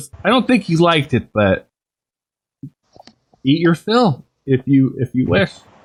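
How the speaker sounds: amused dragon voice. Voicing a dragon after a player bites its dinner: amused dragon voice. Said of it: "As he's kind of amused".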